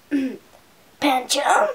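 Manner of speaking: loud put-on cartoon creature voice, swinging pitch. Showing how he sounds in the series: Pancham voice. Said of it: "I'm going to do an impression of him, which is what he sounds like in the series".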